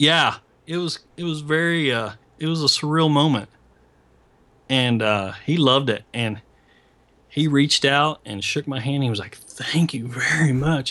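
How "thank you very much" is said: slow, ailing, unwell-sounding voice. Retelling a handshake at a signing, imitating Frank Miller's voice. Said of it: "he's kinda got this voice that kinda talks like this".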